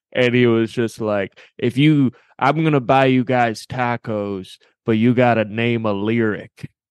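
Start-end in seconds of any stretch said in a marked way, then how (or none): 1.6-6.7 put-on drunk old man voice. Retelling how a man at a bar offered tacos: imitating a drunk old man. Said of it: "he was just very drunk and very old".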